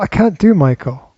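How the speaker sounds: usual speaking voice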